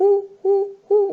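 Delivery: high, loud, imitated cuckoo call.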